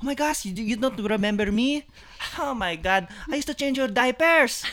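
put-on heavy, hard-to-follow Filipino auntie accent, high. Imitating the titas at a party greeting her, in a barely understandable accent. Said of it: "in an accent I can barely understand".

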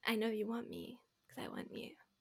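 breathy, whispered, put-on seductive voice. Showing the voice they pull out: put-on sexy voice. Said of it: "That's my sexy voice".

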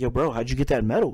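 put-on dead-serious, low, sincere and earnest voice. Telling how a guy at a party broke the ice: retelling in a serious voice. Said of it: "in a serious, authentic voice".

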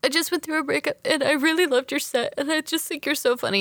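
put-on weepy, heartfelt, high, tearful, gushing girl voice. Retelling what a crying girl said in a bathroom: imitating a crying girl. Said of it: "the crying girl goes like".

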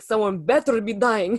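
put-on botched Russian accent, very slow and drawn out. Quoting a line from a Shrek scene: failed Shrek voice, sounds Russian. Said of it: "That was Russian as fuck".

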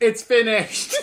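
put-on yelling, acted-out shout. Describing what she yells when she's done, retelling a yell. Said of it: "she just yells".

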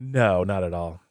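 dry, slow, sarcastic "no". Asked whether you add to their terrible mood, answer with sarcastic denial. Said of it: "I feel like there's a little sarcasm".

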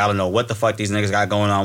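plain

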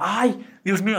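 high-pitched, thrilled, excited gushing. Retelling what a security guard said on meeting them, imitating an excited guard. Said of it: "Se emocionó".

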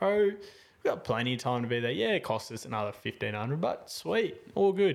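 play-acted laughing, light joking manner. Retelling how they joked to a friend about a full flight: retelling own laughing reply. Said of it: "I'm laughing 'cause I just turn it all into a joke".

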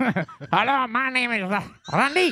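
squeaky, very high put-on French accent mouse voice. Repeating another guest's earlier greeting, the speaker does a mock french mouse voice. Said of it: "It was a French mouse".

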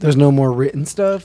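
usual speaking voice

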